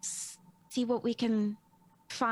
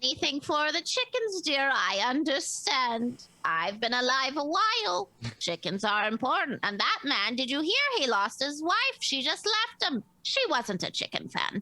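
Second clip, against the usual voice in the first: little sing-song turtle voice, swooping about; 3 semitones higher than usual. Answering a player's apology, Madam Lala in a little turtle voice. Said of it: "turtle voice that goes".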